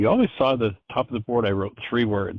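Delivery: ordinary talk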